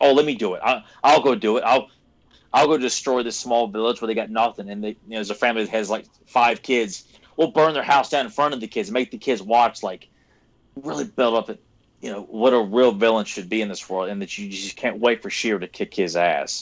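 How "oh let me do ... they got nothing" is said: ordinary delivery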